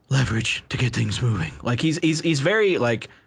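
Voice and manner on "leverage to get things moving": put-on whispered, masked voice. Quoting a film line to show the character's voice: imitating Batman whispering. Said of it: "it's almost like he's whispering".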